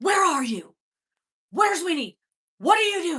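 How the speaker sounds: crazed, frantic, high, very loud yelling. Retelling an old phone call from the uncle, imitating his frantic voice. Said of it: "I can hear the frantic, just crazy in his voice".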